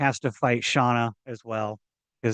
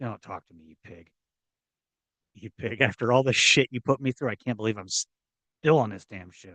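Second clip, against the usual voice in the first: put-on disgusted voice, quieter; 2 semitones lower, 4 dB quieter than usual. Voicing what Rand thinks while looking at Kirk: imitating Rand, disgusted. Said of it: "with that disgusted look on his".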